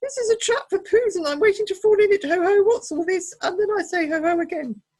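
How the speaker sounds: squeaky little voice, very high and loud. Reading a story aloud, voicing Piglet's reply: Piglet, very quick and squeaky. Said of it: "he said very quickly and squeakily".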